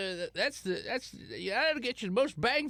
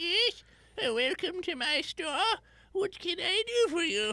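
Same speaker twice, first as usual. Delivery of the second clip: put-on high little old lady voice; 8 semitones higher than usual. Narrating a shopping scene, voicing the apothecary's old lady: little old lady voice. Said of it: "There's a little old lady".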